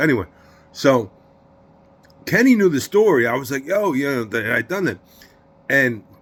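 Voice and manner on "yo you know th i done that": usual speaking voice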